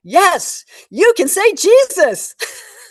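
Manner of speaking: very loud, slow, drawn-out, swooping emphatic delivery. Retelling the answer to a woman who whispered a question: very loudly. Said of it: "And I said very loudly".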